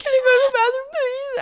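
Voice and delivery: put-on, very high, loud tearful sobbing and bawling. Retelling asking to leave class while bawling, imitating own bawling. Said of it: "I was bawling".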